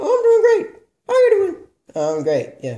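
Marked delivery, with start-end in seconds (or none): 0.0-1.6 very high-pitched, puppet-style voice. Voicing a ventriloquist puppet greeting the host: Plumba Baba puppet voice. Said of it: "I'm a very bad ventriloquist".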